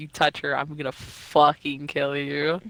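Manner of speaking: mock furious possessiveness. Retelling a story character's threat to an enemy: imitating possessive rage. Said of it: "full possessive mode".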